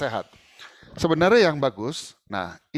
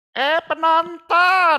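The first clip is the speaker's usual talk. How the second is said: very high, shrill cry in lenong performer voice; 7 dB louder than usual. Speaker demonstrating how Betawi lenong performers call to the audience: shrill Betawi lenong voice. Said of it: "buset itu suara ya, cempreng gitu".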